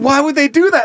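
put-on, high-pitched yell. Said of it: "I just like how you just yelled at me".

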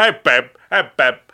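loud, belted, bad talk-show host impression. Showing a co-speaker how to do the impersonation, with a Dennis Miller impression, Dana Carvey's version. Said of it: "I'm basically doing Dana Carvey's impersonation".

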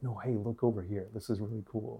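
intimate close whisper. Showing the tone used on the show: intimate whisper to the listener. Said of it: "this is a person whispering to you".

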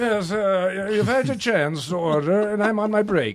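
high, snooty British accent.

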